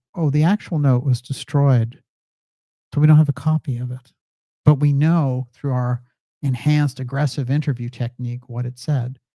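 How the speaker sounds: plain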